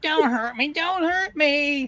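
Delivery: pleading, begging weasel voice. Voicing a weasel who falls on his back: pleading weasel voice. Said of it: "flops down on his back".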